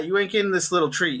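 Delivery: ordinary delivery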